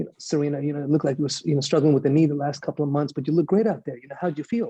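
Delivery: put-on, completely straight, dead-serious interviewer tone. Retelling an interview question asked while trying not to laugh: imitating a super serious interviewer. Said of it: "I'm super serious".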